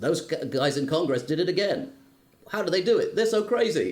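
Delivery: mechanical DJ patter voice. Speaker recalls a Simpsons episode, quoting the robot DJ: Simpsons automated DJ voice. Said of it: "the automated D J voice says".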